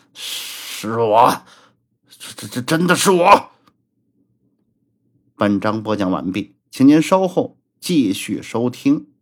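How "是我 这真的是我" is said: voice quivering and trembling throughout. Pressed for an answer in front of others, replying in a trembling voice. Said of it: "声音颤抖道".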